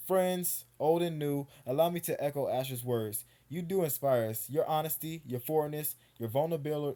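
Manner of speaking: ordinary delivery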